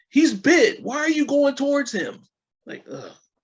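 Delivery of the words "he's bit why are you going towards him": shrill, high, full-volume yelling. Watching someone head toward a bitten man, acting out frustration: mock-yelling at the screen. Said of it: "I'm gonna be yelling at my screen".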